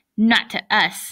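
ordinary delivery

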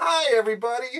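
very high, very loud, shrill shout. Doing an impression for the episode, in an impression of Kelsey Grammer's character. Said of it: "here's an impression of Kelsey Grammer's character".

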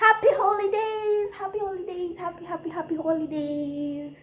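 lilting sing-song tone.

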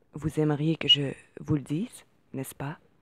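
ordinary delivery

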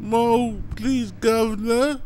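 pleading, begging cry, shrill, very high and loud. Mocking YouTubers who ask for money: mock begging like Oliver Twist. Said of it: "begging, crying".

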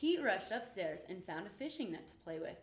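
ordinary delivery

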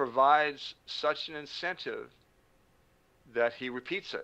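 very slow, deliberate, each word drawn out carefully. Defining addiction in a conversation, speaking really slowly. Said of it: "I'll say it really slowly".

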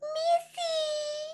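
very high, crackly little troll voice. The littlest troll pops up from a snowbank and calls to Kyrie: high, crackly voice. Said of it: "he called in a high, crackly voice".

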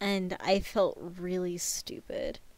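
low, soft, sheepish, embarrassed whisper.

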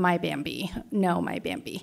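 slow, sobbing, crying voice through tears. Retelling how a dog owner froze and kept crying: imitating someone crying. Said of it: "just kept crying".

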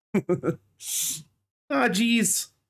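very high mock cartoon voice. The speaker practices aloud, trying out a Morty voice. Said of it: "I got to work on my Morty voice".

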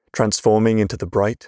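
ordinary delivery, nothing marked

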